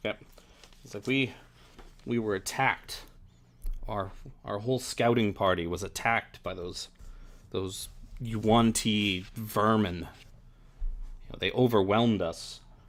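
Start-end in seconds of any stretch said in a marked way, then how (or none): none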